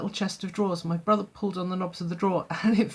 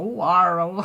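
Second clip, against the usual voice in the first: put-on West Country accent, said louder; 4 dB louder than usual. Retelling how Mister Padey spoke: imitating a strong West Country accent. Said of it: "such a strong West Country accent".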